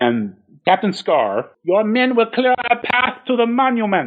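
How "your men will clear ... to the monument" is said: put-on German accent, slow and pitched up. Retelling a scene, quoting Captain Scar's order in a put-on German accent. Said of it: "I keep doing a German accent".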